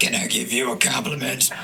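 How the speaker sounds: very deep, dropped bass voice. Speaker retelling a man's line while ordering for him, imitating a very deep voice. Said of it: "It was just so deep".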